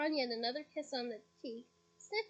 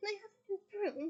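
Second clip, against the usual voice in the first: hopeful tone with raised pitch; 6 semitones higher than usual. Reading a story aloud: a boy asks his mum for something, hopeful. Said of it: "said Ron hopefully".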